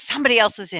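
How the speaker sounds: subdued, low-key delivery. Narrating a game scene, voicing someone after the voices stop, quiet voice. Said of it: "quietly says".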